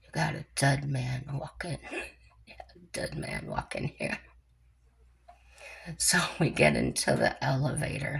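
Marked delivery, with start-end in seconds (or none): 0.2-4.2 hushed mutter under the breath. Recounting what the speaker muttered before getting in the elevator, retelling an under-breath mutter. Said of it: "I was saying under my breath".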